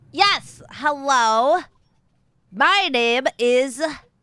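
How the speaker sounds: very slow, nasal, angry, cross character voice. Trying to recall a character's voice for the group, in a nasally, angry voice. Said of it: "She's kind of nasally and angry".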